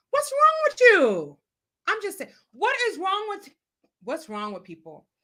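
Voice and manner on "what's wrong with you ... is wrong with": high, swooping, exasperated shouted rant. Venting to a listener while telling a story about a couple: yelling. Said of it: "Sorry, I'm yelling".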